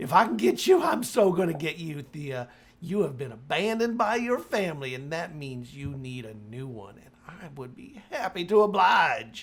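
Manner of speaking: strange possessed voice. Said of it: "this voice is coming out of my sister's body that's not hers".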